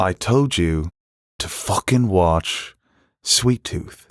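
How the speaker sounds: put-on British accent. Starting a Succession review, one host slips into Logan, British accent. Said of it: "why are you doing a British accent?".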